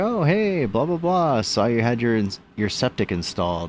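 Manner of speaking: chummy, friendly tone.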